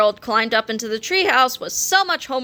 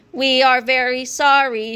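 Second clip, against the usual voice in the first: very slow, flat, machine-like robotic monotone. Narrator reads students apologizing to their math teacher for being late, robotic. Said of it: "said yesterday Harold robotically".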